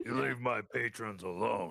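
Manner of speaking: heavy, big-voiced call-out. Narrating the uncle calling out over the street, in a booming voice. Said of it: "He booms out over the over the street".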